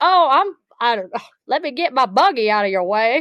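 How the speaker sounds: put-on Texas accent, pitched high. Retelling a grocery store encounter in Texas, quoting a shopper, in a put-on Texas accent. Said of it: "That was my Texas accent".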